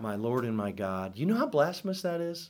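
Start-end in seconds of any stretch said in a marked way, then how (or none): none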